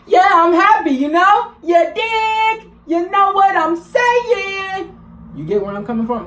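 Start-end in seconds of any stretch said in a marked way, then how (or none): 0.1-4.9 bright, cheerful, upbeat, very high voice. Teaching how emotion should come through in speech, happy upbeat voice. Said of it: "hear the fucking emotion in your voice".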